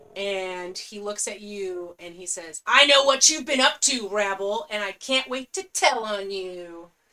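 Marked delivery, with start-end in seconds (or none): 2.7-6.9 loud, booming, menacing orc voice. A narrator voices a character confronting Rabble, in an intimidating character voice. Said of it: "he's very intimidating".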